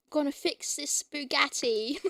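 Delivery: imitated, put-on British accent. Imitating how a british guy in a feed says bugatti, imitating his accent. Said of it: "he's a British guy, and like he the way he says Bugatti".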